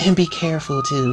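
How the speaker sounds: sugary, sweet, high little voice. Retelling the girlfriend character asking him to be careful: imitating Brenda saying it sweetly. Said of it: "She said it all sweet".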